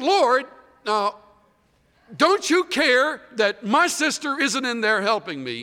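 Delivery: put-on teenager voice. Retelling what a woman said to Jesus about her sister, sounding like a teenager. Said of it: "It sounds like a teenager right now".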